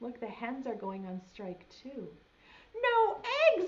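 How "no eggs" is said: shrill, very high dismayed outcry. Reading a picture book aloud, voicing the farmer: crying out in dismay. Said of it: "cried Farmer Brown".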